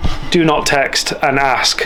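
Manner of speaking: aggressive, loud delivery.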